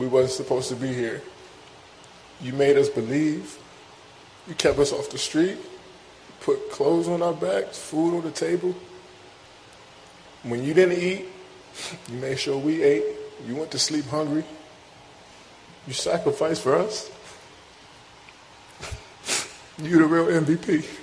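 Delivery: choked-up, tearful voice catching with emotion. A son speaking to his mother in a video, choked up. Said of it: "he's clearly choked up".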